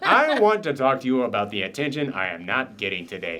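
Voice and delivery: swooping, sing-song, fussy, demanding dog voice. Pretending the dog Peach is complaining to another speaker: voicing the dog Peach. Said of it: "I just pretend she's saying things".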